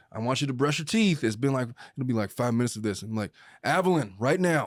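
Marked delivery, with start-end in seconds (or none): 3.7-4.7 stern, firm, authoritative dad voice. A father recounting getting a kid to brush their teeth: retelling his dad voice. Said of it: "when I use my dad voice".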